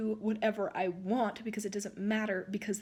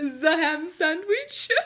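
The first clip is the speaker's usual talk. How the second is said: booming, loud, bad fake German accent; 6 semitones higher, 8 dB louder than usual. Retelling a man's reply to a customer's order, in a bad German accent. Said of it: "He just kept putting the word Z in front of".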